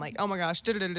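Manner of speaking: put-on panicked voice. A guest describes coming in at full panic mode, acting out her own panic. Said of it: "I will come in there full panic mode".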